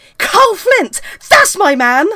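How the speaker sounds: put-on young lad voice in a high, loud, drawn-out shout. Retelling what a younger lad in the queue shouted: imitating a lad shouting. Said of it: "And he shouted out".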